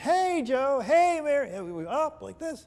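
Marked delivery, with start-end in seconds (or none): 0.0-1.5 very high, bubbly, drawn out, an octave up. Describing a bubbly woman greeting people, imitating her raised bubbly voice. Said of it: "she would raise the octave in her voice".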